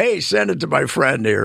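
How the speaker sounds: normal talking voice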